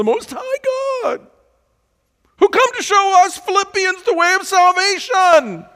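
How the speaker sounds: mock taunting, very high-pitched and very loud. Speaker asks listeners to imagine a woman saying this, acting out a mocking tone. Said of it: "she is saying in a mocking tone".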